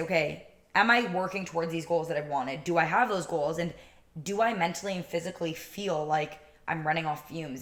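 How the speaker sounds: ordinary talk, nothing marked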